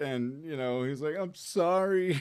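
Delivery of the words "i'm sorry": tearful, pitched-up crying voice. Retelling a movie scene where Peter apologizes: imitating Peter crying. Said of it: "And he's crying".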